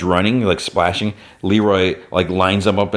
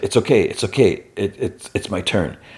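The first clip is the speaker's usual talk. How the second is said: halting, stumbling voice of a dying man. Retelling a dying character's last words: imitating Paulie speaking quietly. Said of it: "Then he quietly is like".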